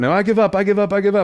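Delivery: put-on pleading yell, high-pitched. Retelling a fight, acting out the guy who starts yelling that he gives up. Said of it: "he starts yelling like".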